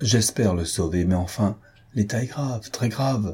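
ordinary delivery

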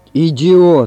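thundering shout. Narrator reads Ivan Ivanovich alone at night among his purchases; thundering exclamation. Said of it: "воскликнул он, и голос его прогрохотал".

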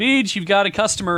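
loud, high-pitched hollering yell. Retelling a dad calling down the stairs: imitating dad yelling. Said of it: "my dad yells".

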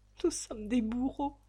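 faltering, stammering. A narrator reads a woman's words on learning of a death, stammering.

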